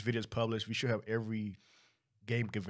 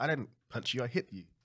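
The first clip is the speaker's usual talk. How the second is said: normal talking voice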